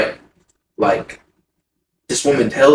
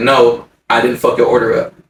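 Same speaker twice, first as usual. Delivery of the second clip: ordinary delivery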